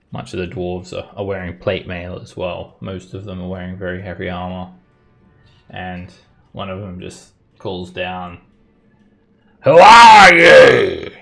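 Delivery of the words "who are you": very loud, high, stretched-out booming shout. A narrator voices an armored dwarf calling down from the cliffs, booming call. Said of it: "his voice booms and echoes".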